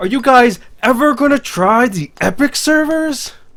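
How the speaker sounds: very high, very loud, shrill scream. Saying someone's question to represent it better: screaming. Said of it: "say this question uh, while screaming".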